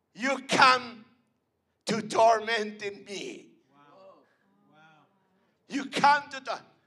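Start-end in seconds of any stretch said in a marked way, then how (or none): 0.2-3.5 creepy voice, much louder. Retelling the voice heard on walking into the house; loud creepy voice. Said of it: "a loud voice, so creepy".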